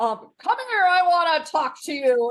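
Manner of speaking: put-on commanding officer-style boom, loud and high. Recalling how a man called someone over to talk, imitating a big booming voice. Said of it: "with the big booming voice".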